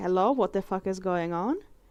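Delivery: ordinary talk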